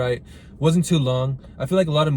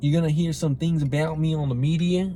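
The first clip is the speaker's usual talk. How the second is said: bad, weak put-on Australian accent; 3 semitones higher than usual. Speaker quotes an Australian man's public apology, bad Australian accent. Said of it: "I can't even do a good Australian accent".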